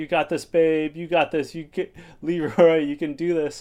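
high, encouraging cheering shout. Recapping an episode, retelling a woman cheering someone high in the air, retelling shouted encouragement. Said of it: "Cam's shouting like encouragement".

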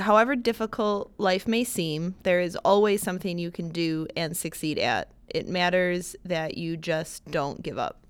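ordinary delivery

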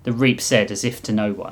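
usual speaking voice

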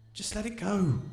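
hushed voice, kept soft. A woman speaks to Colin among her teammates, in a hushed voice. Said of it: "she said in a hushed voice".

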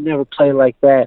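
play-acted high, intense coach voice scolding. Speaker re-enacts what he told him in front of everybody after the game, retelling a yell. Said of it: "I'm yelling at him in front of everybody".

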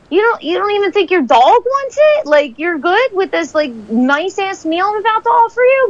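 incredulous, high and baffled.

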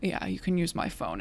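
low, soft, creepy killer voice.

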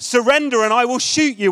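mock child shouting loudly. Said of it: "he shouted at the top of his voice".

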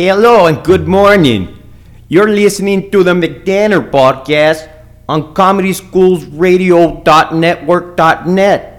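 muddled put-on Danish accent, loud and slow. Podcast host opening the show, in an attempted Danish accent. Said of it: "I don't know what kind of accent this is".

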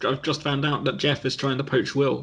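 normal talking voice

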